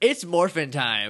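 put-on passive-aggressive delivery. Recapping a favorite episode moment, mock passive-aggressive delivery. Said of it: "Super passive aggressive morphin".

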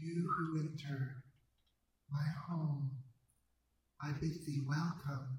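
ethereal, disembodied voice seeming to come from everywhere. An unseen voice from nowhere and everywhere greets those entering its home, ethereal. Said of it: "You hear an ethereal voice from nowhere and everywhere".

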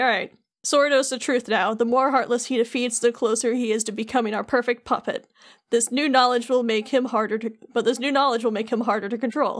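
ordinary talk

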